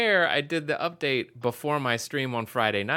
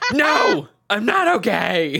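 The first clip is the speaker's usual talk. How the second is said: mock angry, loud, high furious screamed yell; 9 semitones higher, 8 dB louder than usual. Recalling answering someone knocking on the door mid-rage: retelling an angry scream. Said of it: "while I was screaming going".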